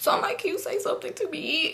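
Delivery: breathy, hushed, whispered, tearful pleading tone. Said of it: "Y'all, I'm crying".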